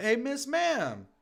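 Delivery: very high, loud hollered shout. Retelling calling out to a local near a building: retelling own scream. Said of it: "I scream out".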